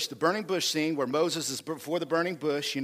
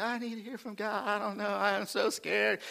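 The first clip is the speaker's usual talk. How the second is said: scared, depressed pleading tone, pitched up; 5 semitones higher, 4 dB quieter than usual. Speaker acts out Elijah running from God; imitating scared, depressed Elijah. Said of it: "Elijah was all depressed".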